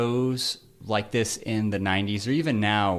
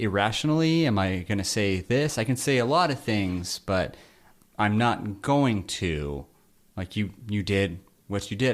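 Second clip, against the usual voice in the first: plain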